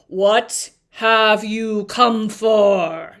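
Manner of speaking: low, rough, loud voice, "for" drawn out. Reading a story aloud and voicing the Sphinx's question, low rough Sphinx voice. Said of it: "Its voice was low and rough".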